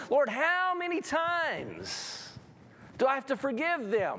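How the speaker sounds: high, swooping whine with "times" stretched out. Retelling Peter's question to Jesus about forgiveness: imitating Peter's whine. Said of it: "I could almost hear a whine in Peter's voice".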